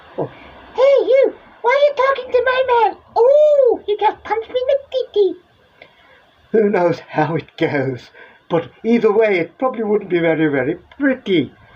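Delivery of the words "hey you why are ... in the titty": very high, squeaky, silly put-on comic voice. Acting out a confrontation over talking to someone's man: funny put-on voice. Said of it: "funny voices aside".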